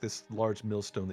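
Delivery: plain reading voice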